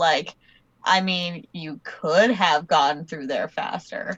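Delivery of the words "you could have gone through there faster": mock snarky, passive aggressive voice, lower. Playing a snarky escape room: put-on passive aggressive tone. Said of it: "passive aggressive".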